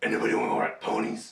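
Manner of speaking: very low, gruff voice. Joining in on a joke about the burly Batman voice: burly Batman-y voice. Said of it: "does [name] need a lozenge?".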